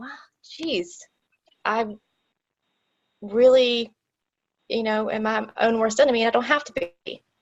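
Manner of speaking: teary, on the verge of tears. A guest answering the host's question about where things stand, teary. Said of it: "I'm kind of teary right now".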